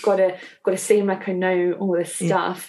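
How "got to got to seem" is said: ordinary delivery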